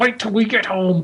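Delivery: clenched-jaw speech through gritted teeth. Acting out a parent gripping a kid's arm: imitating talking through gritted teeth. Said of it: "you're talking through gritted teeth".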